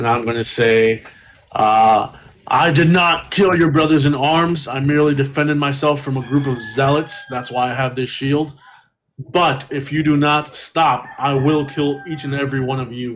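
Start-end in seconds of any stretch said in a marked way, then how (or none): 2.5-13.2 stern, firm, intimidating tone. Intimidating a group of enemies in character: yelling a threat. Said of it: "I'll yell it at all of them".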